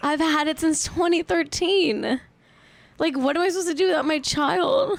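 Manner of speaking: high, tearful crying voice while talking. Speaking on a podcast, the speaker breaks down crying. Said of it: "And I'm crying on Twitch".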